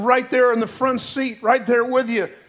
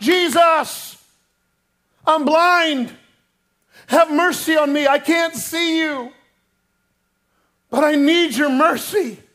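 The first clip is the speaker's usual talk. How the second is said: pleading cry with the word Jesus drawn out; 4 semitones higher than usual. Retelling how the blind man cries out to Jesus: retelling a shout. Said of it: "And he begins to shout".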